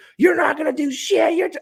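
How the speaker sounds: acted, very high, shrill, loud taunting scream. Retelling how a woman at the dart line heckled: imitating a woman screaming. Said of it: "one lady literally screaming at me".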